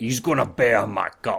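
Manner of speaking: clumsy, bad, fake put-on orc voice. Reading out what a vassal will do in a game: bad orc accent. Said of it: "That wasn't a very good orc accent".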